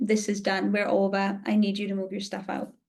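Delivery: acted-out, re-enacted calm delivery. Retelling what she said to him back then, acting out staying calm. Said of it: "I was calm".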